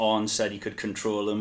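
ordinary delivery

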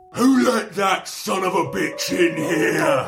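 big, resounding, booming bellow, very high. The game master voices an unseen figure as the party heads upstairs: booming voice. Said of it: "You hear a booming voice".

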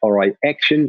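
terrible, badly done put-on New Zealand accent. Acting out someone giving the cue to start on camera: terrible new zealand accent. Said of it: "This is a terrible New Zealand accent".

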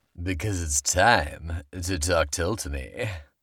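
sultry, seductive put-on sexy voice, radio-ad style. Host wrapping up a mock travel pitch, in a sexy voice. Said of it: "That was my sexy voice".

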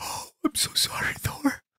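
whispered, sobbing, weeping voice. Playing a fan holding a thor hammer in the theater, grieving thor: weeping.

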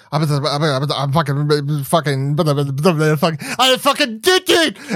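repeated words hammered, loud with swooping pitch. Joking about how one streamer celebrates on stream: xQc impression. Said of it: "my X Q C joke".

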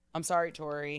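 mock tearful, teary apologetic tone. Retelling how he apologized as he left: imitating a tearful apology. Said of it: "Tears in his eyes".

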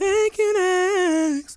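"you" said very high and stretched out. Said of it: "Do your impression".

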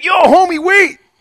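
brash loudmouth voice, loud and pitched way up. Retelling how a barber stopped the speaker leaving the barbershop, imitating a loudmouth. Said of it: "one of these loudmouth barbers comes up to me like".

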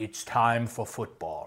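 very quiet, murmured announcer intonation. Opening talk on the football season, quoting a line in John Facenda voice. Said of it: "Was that a good John Facenda I just did there?".

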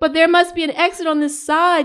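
high, loud yell. Narrator reads a woman answering a man over highway traffic, yelling back. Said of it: "she yelled back".

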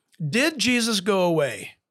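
ordinary talk, nothing marked

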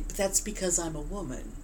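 calm, soft-spoken words. Retelling what she would answer when he called it weird: retelling her calm, quiet reply. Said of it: "she would just very calmly and quietly say".

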